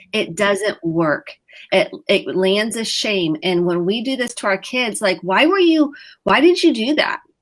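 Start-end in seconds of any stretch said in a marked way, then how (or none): 5.2-7.1 high, shaming, accusatory tone. Showing how a parent's question to kids sounds: shaming tone. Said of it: "See how my tone of voice and my face".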